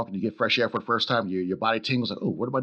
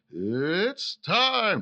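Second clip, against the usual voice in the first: 'it's' held long with a swinging pitch; 9 semitones higher than usual. Imitating a ring announcer's catchphrase: Bruce Buffer impression. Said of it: "when Bruce Buffer goes".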